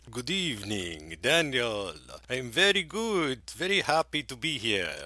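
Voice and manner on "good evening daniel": classic film vampire voice. A co-host greets the host at the start of a Dracula show, doing a Dracula impression. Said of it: "That's my Dracula impression".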